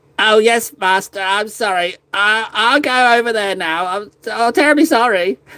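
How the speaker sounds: high, whiny, snivelling goblin voice, grovelling. Playing a little gretchin apologizing to its master: snivelling gretchin servant voice. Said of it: "I guess I'm a little snivelling, little snivelling little Gretchen".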